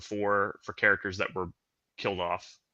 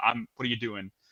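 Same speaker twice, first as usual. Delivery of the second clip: put-on New York accent with attitude, quieter; 5 dB quieter than usual. Retelling a driver's angry reply at a crosswalk: New York accent and attitude. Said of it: "the New York attitude, and the guy's like".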